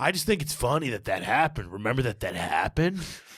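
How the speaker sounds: mock-menacing, threatening tone. Retelling how you spoke to a man your friend hit with a paintball barrel, mock-menacing. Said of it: "I'm acting like all like menacing".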